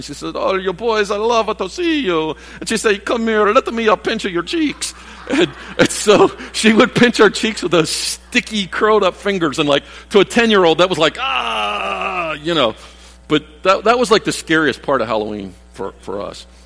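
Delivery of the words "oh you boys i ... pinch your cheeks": put-on Italian accent, higher. Recalling a woman greeting them as boys at Halloween, Italian accent. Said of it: "she had this Italian accent".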